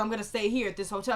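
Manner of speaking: ordinary delivery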